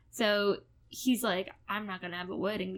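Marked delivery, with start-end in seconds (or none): 1.7-2.8 put-on southern accent with a twang. Recapping a drama plot, voicing the kidnapper, in a southern accent. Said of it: "I don't know why I gave him a southern accent".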